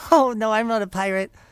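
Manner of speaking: high, loud, eager, bouncing goblin voice. Voicing a goblin character for the other players, excited goblin voice. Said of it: "jumping up and down all excitedly".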